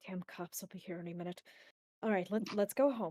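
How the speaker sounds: muttering quietly under the breath. Narrating a scene, voicing a man who mutters under his breath. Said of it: "he kind of mutters under his breath".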